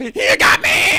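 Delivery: screaming. A witness questioned in court about false statements cries out, screaming. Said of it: "The witness will lower his voice".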